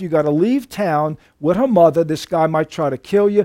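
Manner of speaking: usual speaking voice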